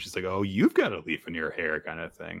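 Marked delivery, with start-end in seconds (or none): 0.2-1.8 light, sing-song, playful teasing tone. Retelling a character teasing him about a leaf: acting out a teasing line. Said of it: "she just starts kind of teasing him".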